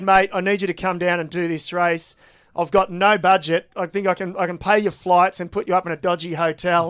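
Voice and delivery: ordinary talk, nothing marked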